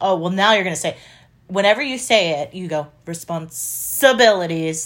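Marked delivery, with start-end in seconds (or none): 3.1-4.9 mimicked wrong stress on responsibilities. Imitating how the other speaker says a word: misplaced stress in responsibilities. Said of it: "like you put the accent on the wrong, wrong place".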